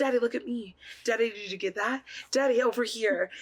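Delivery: put-on scratchy, raspy little girl voice. Recalling family home videos of herself as a child, raspy little girl voice. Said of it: "this raspy little girl voice in the background".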